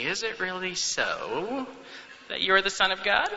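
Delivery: weaselly, little voice. Imagining Satan speaking to Jesus, in a weaselly little Satan voice. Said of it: "with his weaselly little voice saying".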